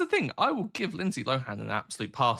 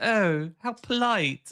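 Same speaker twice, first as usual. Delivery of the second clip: put-on posh British accent, higher, louder, slower; 9 semitones higher, 4 dB louder than usual. Discussing a posh accent, the speaker mimics it: mock posh british accent. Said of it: "very oh British accent".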